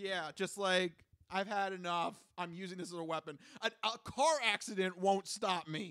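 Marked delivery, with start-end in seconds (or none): none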